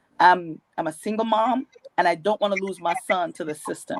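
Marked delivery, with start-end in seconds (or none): none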